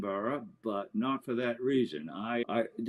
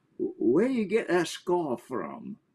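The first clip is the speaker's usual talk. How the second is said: put-on old Scottish woman's accent, sing-song and pitched up; 6 semitones higher than usual. Retelling what an old woman on a porch asked: Scottish accent. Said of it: "said in that wonderful Scottish accent".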